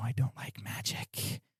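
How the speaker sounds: quiet close whisper. Playing the person who appears right behind your head: whispered into the ear. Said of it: "it's like whispered into your ear".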